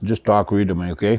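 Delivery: ordinary talk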